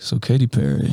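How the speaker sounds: smooth late-night radio DJ delivery. Imitating another speaker's greeting: imitating a late night radio voice. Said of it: "You were like".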